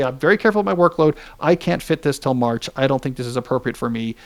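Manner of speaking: ordinary talk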